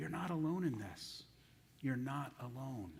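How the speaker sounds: soft, hushed half-whisper under the breath. Retelling God's words to Elijah: imitating a half-whisper. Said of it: "He's whispering to Elijah".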